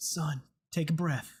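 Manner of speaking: weak, painfully forced-out, strained words. Voicing a character, the speaker painfully gets the words out. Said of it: "He's just gonna painfully get out".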